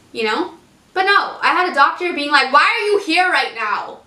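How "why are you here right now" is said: raised voice, confronting and demanding. Retelling what a doctor asked on arrival at hospital: imitating a raised voice. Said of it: "literally raising her voice at me".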